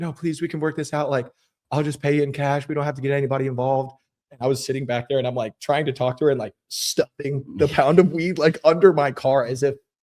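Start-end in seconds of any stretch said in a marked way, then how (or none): 0.0-3.9 mock, frantic, desperate, near-tears pleading voice. Retelling pleading with a woman who threatened to call the cops, retelling desperate begging. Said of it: "literally begging her".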